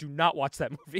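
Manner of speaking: usual speaking voice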